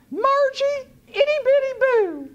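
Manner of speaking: loud, squeaky, very high chipmunk falsetto. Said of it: "raised my voice roughly four octaves and said as rationally as I could in my Alvin and the Chipmunks falsetto".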